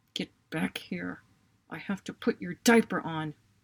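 acted growl through clenched teeth. Retelling what the speaker said to their son during a phone call, growling through teeth. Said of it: "I growled through my teeth".

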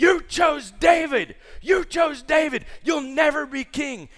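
very high, shrill, very loud screaming. Retelling Saul screaming at Jonathan: imitating Saul screaming. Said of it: "He's screaming at him".

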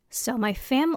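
soft voice cracking and squeaking mid-phrase. Podcast host starting her happy-this-week segment before signing off, voice cracking. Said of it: "did you hear my voice crack".

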